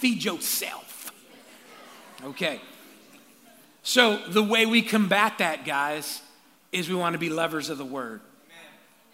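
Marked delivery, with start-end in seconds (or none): 0.0-1.1 put-on slight South Sacramento accent with attitude. At church, the speaker has the crowd tell their neighbor: South Sac accent with attitude. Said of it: "Say it with a little South Sac accent".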